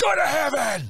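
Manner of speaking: play-acted, shrill, piercing, very high, sudden scream. Retelling screaming at two men about to fight: imitating own past scream. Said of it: "I just screamed at them".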